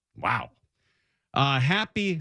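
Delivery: ordinary talk, nothing marked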